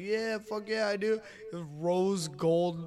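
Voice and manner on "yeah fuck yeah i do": put-on drunk voice, higher. Retelling a friend's reply about pierced nipples: imitating drunk Dominic. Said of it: "And Dominic's all, like, fucking drunk".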